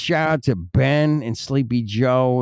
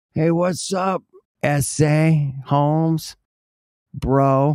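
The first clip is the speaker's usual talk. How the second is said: speaking at a higher pitch; 3 semitones higher than usual. Retelling how friends from California greeted: imitating Chicano friends. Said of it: "I would call 'em Chicanos".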